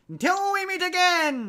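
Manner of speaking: very high, swooping, slow villain voice. Asking whether an actor will do the voice, then doing it: Skeletor voice. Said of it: "do you think he's gonna do the voice?".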